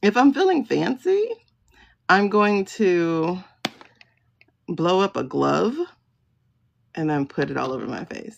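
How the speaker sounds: talking while cracking up, laughing through words. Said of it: "I'm laughing at myself".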